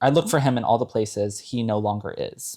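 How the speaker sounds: ordinary talk, nothing marked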